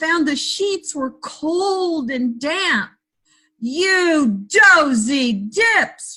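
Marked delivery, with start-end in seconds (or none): 3.6-6.2 furious giant voice, scolding, "you" stretched out. Narrator reading a story, voicing the giant in a cold damp bed: roaring angry giant. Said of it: "roared the giant".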